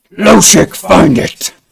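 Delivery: loud, raspy, barked villain voice.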